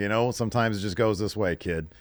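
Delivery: ordinary delivery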